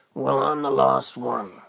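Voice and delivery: hoarse, croaky voice. A narrator voicing a talking tree that answers Peter, in a croaky talking-tree voice. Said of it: "talking with this croaky voice".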